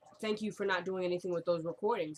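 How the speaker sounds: ordinary talk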